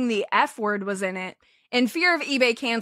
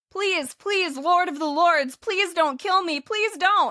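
groveling, high-pitched pleading; 6 semitones higher than usual. Acting out an imagined scene of Greg pleading: acting out someone begging. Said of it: "He's begging".

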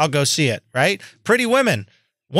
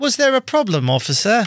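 fake British accent, pitched higher. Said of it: "He won't stop that fucking accent".

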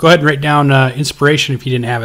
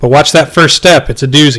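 ordinary talk

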